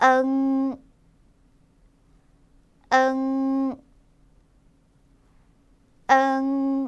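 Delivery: nasal, nasalized sound. Showing learners a Chinese syllable: nasal sound. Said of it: "여기도 콧소리를 내야겠구나".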